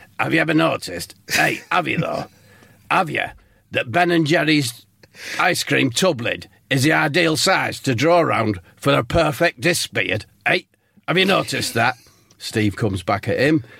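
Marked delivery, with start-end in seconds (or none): 0.2-12.0 put-on voice, teasing and needling. Acting out a guest who greets the class: Sean Dyche impression.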